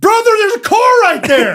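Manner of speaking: put-on frightened shout, high-pitched and loud. Retelling a car ride from the very back seat: retelling a yell. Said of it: "this is when I yelled".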